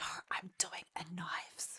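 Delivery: hushed whisper, in character. Whispering in character to a companion while hidden: whispering in character. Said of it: "I'm gonna whisper and say".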